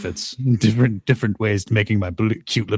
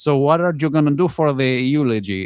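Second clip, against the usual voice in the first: fake Latin accent, laid on, pitched up; 6 semitones higher than usual.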